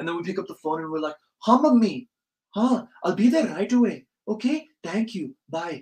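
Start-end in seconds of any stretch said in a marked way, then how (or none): 1.5-5.8 put-on Indian accent, polite, pitched up, slow. Retelling answering a phone call after chatting with friends, in an indian accent. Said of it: "your voice just switches to like an Indian accent".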